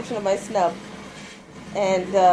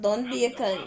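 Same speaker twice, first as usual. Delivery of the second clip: ordinary talk, nothing marked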